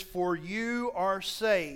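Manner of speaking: very slow, deliberate reading. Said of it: "and I'll read it slowly".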